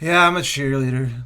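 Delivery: mock flat, unenthusiastic cheerleader delivery. Repeating another player's line the way they said it: imitating an unenthusiastic delivery. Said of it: "in the least cheerleadery way you could possibly say".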